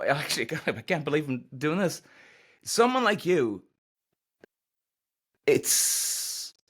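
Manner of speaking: on the verge of tears. A host introducing his guest, almost tearing up. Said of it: "I'm almost tearing up".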